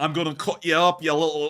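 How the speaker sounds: put-on Scottish accent. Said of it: "I can't do the Scottish accent anymore".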